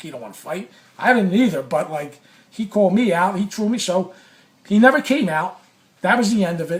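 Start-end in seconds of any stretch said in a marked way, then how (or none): 0.0-0.7 low, much softer, under-the-breath voice. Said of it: "I said to myself inside".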